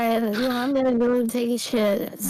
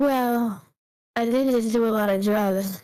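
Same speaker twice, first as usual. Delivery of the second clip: heavily slurred speech. Told they sound younger, a character answers, slurred speech. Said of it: "the way you're slurring".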